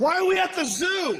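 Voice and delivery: panicked shout, yelling.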